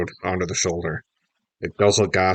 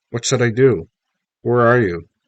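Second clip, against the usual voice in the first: put-on voice trembling on each word; 4 semitones higher, 4 dB louder than usual. Narrator reads [name] speaking to his mom on the phone, quivering voice. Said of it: "my voice was quivering".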